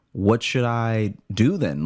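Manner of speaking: freaked-out tone. Retelling what they said to store staff while freaking out: retelling own freaking out. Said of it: "now I'm freaking out because I'm like".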